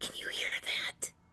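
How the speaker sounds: breathy, theatrical stage whisper. Role-playing game player speaking in character during a scene, in a stage whisper. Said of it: "I stage whisper".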